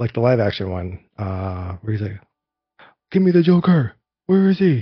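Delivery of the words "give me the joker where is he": put-on hero yell, much higher pitch. Recalling a rainy live-action Batman scene, Batman yelling impression. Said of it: "where he's yelling in in".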